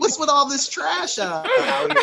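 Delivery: slow, squeaky voice pushed way up high.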